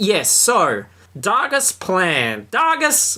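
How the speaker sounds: voice breaking up very high. Speaker recapping a story's plot, voice going funny mid-sentence. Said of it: "my voice went funny there".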